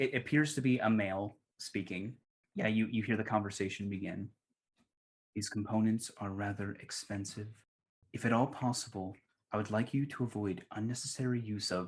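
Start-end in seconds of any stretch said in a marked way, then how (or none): 5.3-11.9 chilly, hushed, cold quiet speech. Game master voicing an unseen man the players overhear, quiet and cold. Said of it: "a rather quiet and, and cold sounding voice".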